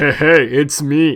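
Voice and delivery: very loud, big put-on hero voice. Trying out a low voice for a character, deep Shadow the Hedgehog voice. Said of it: "almost just like a deep like".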